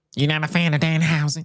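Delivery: high nasal nerdy voice. Asking another speaker about a wrestler, sounding like Urkel. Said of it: "that sound like Urkel".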